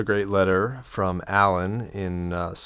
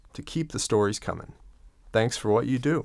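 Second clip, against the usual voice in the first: usual speaking voice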